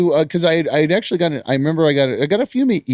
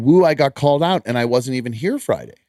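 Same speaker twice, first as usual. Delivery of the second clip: normal talking voice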